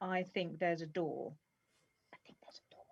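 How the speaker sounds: sneaky, hushed, very quiet murmur. Speaking in character to a companion while sneaking up to a curtain: said very quietly. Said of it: "I'm gonna say very quietly to Tariel".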